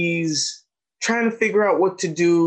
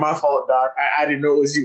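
plain

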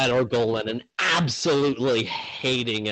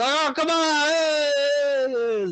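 put-on Italian crowd voice, much higher, slower. Voicing the crowd while retelling the scene, in an italian crowd voice. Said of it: "They're all Italian for some reason".

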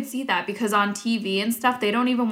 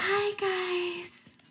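ditzy, airheaded voice pushed way up in pitch; 10 semitones higher, 8 dB quieter than usual. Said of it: "they also made her pitch her voice up".

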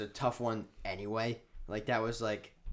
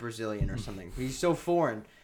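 ordinary talk, nothing marked

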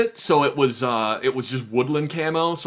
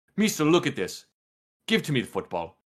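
put-on pushy, insistent man voice; 4 dB quieter than usual. A speaker acts out what an insistent man kept saying, imitating a pushy man. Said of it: "gets this look on his face that's like".

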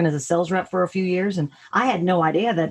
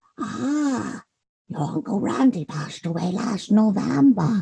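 put-on slow, elderly Polish woman voice; 4 semitones higher than usual. Recalling voicing a villager in one episode, in an old Polish woman voice. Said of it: "I channeled my, my Polish, great grandmother".

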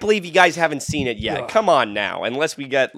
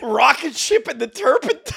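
silly, very high-pitched voice; 12 semitones higher than usual. Mimicking another speaker's line back at them: imitating the Chester Bailey impression. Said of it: "You're like".

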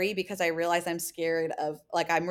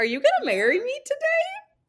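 mock very high, playful, teasing sing-song; 6 dB louder than usual. Retelling a woman's question to a man, imitating her teasing voice. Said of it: "she does that like teasing voice".

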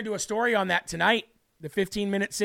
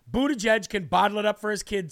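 ordinary delivery

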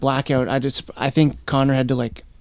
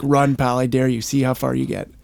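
teasing, goading, taunting tone. Retelling a cop holding a police dog and daring him to run: imitating a cop teasing. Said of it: "teasing me".

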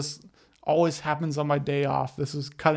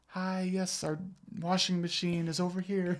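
soft, gentle, very polite best-behaviour voice; 3 semitones higher, 7 dB quieter than usual. Retelling how a friend greeted the workers: imitating Madison's softer tone. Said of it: "never heard Madison talk in a softer tone".

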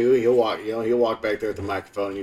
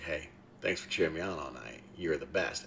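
hushed, very quiet, barely-there whisper; 6 semitones lower, 14 dB quieter than usual. Retelling saying goodnight to a little sister: imitating a whisper. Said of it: "just whispered to her".

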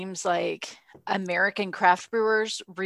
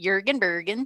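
comic put-on Swedish accent, cartoon chef style. Calling the accent more like Swedish Chef: Swedish Chef accent. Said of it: "I think it's more like Swedish Chef. Kind of Jürgen Bergen. Like that".

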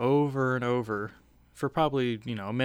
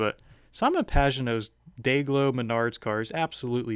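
ordinary talk, nothing marked

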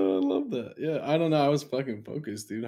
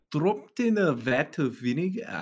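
attempted Scottish accent; 5 semitones higher than usual. Asked to hit the accent, repeating the phrase in a Scottish accent. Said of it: "Can you hit that accent".

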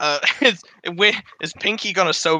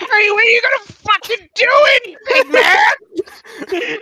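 very high, loud screaming voice; 6 dB louder than usual. Playing a game character who screams at another character: screaming at someone. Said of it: "I kind of scream at Harry and I go".

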